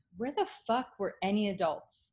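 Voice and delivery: ordinary talk, nothing marked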